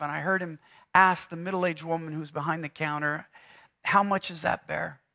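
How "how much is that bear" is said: mock gentle, soft voice heavy with grief. Retelling a grieving father asking the shop clerk about a bear: retelling a soft grieving voice. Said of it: "His voice was softened, filled with grief".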